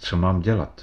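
ordinary delivery

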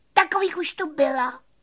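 very high, shrill squeaky cricket voice. A cricket comments after the bumblebee, squeaky cricket voice. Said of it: "vypískl cvrček".

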